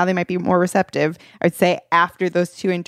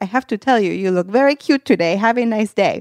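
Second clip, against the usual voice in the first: put-on thick, heavy, laid-on Russian accent; 3 semitones higher than usual. Recalling a passing man's compliment, the speaker does a heavy russian accent. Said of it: "he had like a very heavy Russian accent".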